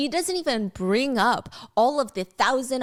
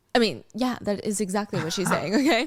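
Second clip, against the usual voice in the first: ordinary delivery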